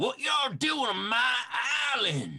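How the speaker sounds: very high, slow, drawn-out dwarf voice. Voicing a dwarf with a long stick who steps out: dwarf character voice. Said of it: "you can see this dwarven individual".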